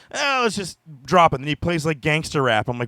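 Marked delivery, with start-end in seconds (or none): 0.2-1.4 put-on British accent, pitched up. Retelling what a guest said on his show: imitating a British accent. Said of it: "comes out with the British accent".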